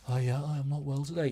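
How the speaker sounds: feigned sick, under-the-weather voice. Showing how to phone in sick while lying upside down: fake sick voice. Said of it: "you wanna sound sick".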